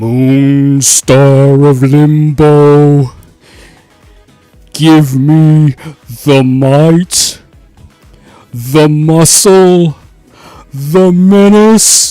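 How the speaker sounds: booming cartoon monster voice, bellowed at full volume. Speaker tries a quote from memory, apologizing for their voice, doing a Monstar impression. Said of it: "I could try to do my impression of Monstar".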